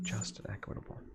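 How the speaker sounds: soft, hushed whisper.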